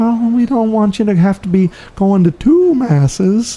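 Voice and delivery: mock timid quavering voice, very high and slow. Mimicking weak-kneed people in the church, imitating a trembling voice. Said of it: "their voice trembles".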